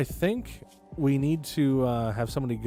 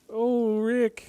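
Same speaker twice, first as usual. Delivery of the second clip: put-on nervous teen boy voice; 10 semitones higher than usual. Joking about a drink name, doing a bad Morty impression. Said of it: "I do not do a very good Morty impression".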